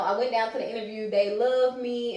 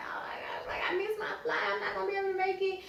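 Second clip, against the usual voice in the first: mock whispery, breathy, tearful boohoo crying; 10 semitones higher, 7 dB quieter than usual. Retelling a call to the manager after missing a flight, imitating own past crying. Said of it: "I'm just boohoo crying".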